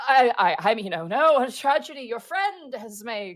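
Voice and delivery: mocking, derisive, very slow and drawn out. Voicing the Forest King laughing at a fallen companion: Forest King laughing mockingly. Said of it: "laughs at, like, Greckles falling into the dirt and goes".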